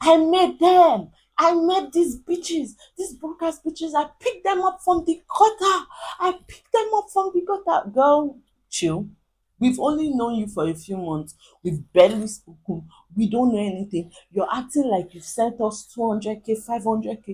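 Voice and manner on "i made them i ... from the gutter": shrieking, very high-pitched, shrill screaming rant. Retelling a quarrel where a girl claimed she made the friends: imitating someone screaming. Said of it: "she's there screaming".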